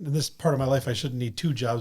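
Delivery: ordinary delivery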